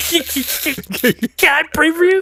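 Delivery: halting, very high, drawn-out, slow stammer. Retelling knocking on car windows to offer prayer: imitating own past stutter. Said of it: "stutter like crazy".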